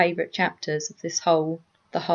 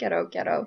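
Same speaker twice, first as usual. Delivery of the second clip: low, whispered, purring frog ribbit. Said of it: "a cat purring that she ribbits".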